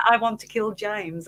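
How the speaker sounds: ordinary delivery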